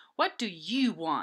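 snapped, mean. Reading a story aloud, a character snaps at Marisol: snapping, fast and mean. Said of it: "He snapped".

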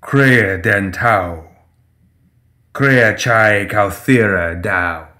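deep, warm, low voice. A towering crow-headed shape leans down and speaks to Seamus in a deep, warm voice. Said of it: "Its voice is deep and warm".

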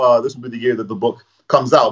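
normal talking voice

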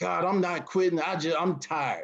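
play-acted, mild, lightly shouted protesting tone. Retelling a climb up a mountain, imitating own screaming at God. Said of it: "just screaming".

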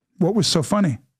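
plain

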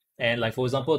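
ordinary talk, nothing marked

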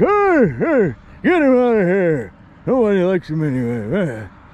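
put-on loud, swooping old man voice, long drawn "hey". The speaker shows off a put-on voice, yelling in an elderly man voice. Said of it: "That's my elderly man voice".

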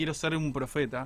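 ordinary delivery

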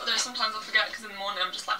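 very fast, erratic rattling speech.

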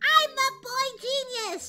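high, loud cartoon character voice. Playing a cartoon character calling himself the boy genius, in Tails voice. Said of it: "That's my Tails voice, but I know it sounds like Bo-kun".

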